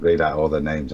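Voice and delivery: ordinary talk, nothing marked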